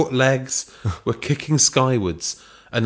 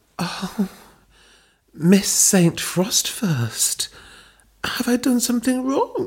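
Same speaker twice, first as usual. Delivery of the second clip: put-on very high, sultry, seductive bedroom voice; 11 semitones higher than usual. Reading a story aloud, Belinda speaks to the acting mistress: Belinda's best bedroom voice. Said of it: "Belinda said in her best bedroom voice".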